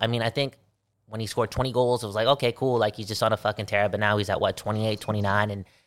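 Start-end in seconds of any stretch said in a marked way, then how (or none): none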